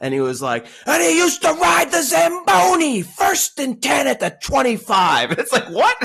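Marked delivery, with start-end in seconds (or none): 0.9-5.3 very high, over-hyped, drawn-out excited yelling. Imitating the announcer telling the Zamboni story: Gus Johnson excited yelling. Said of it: "why are you yelling?".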